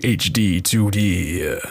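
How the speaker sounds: deep, sultry movie-trailer narrator voice. Recalling a trailer's splash screen narrator, doing the deep sultry narrator voice. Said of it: "the narrator with his deep sultry voice".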